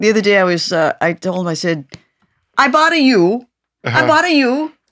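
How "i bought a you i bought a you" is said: put-on Hawaiian pidgin accent. Retelling own words to someone, trying a Hawaiian accent. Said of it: "The accent's a little different".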